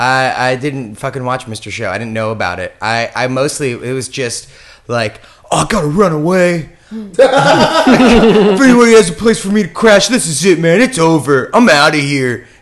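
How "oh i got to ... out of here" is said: put-on high, loud, dramatic teenage emotional venting. Retelling old online journal posts, mock teen emotional drama. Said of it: "real teen emotional".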